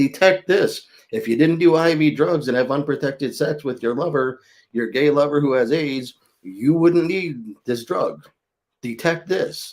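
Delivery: high-pitched shouting yell. Retelling what gets yelled at TV commercials: imitating himself yelling at the TV. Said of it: "And I'm yelling at the T V".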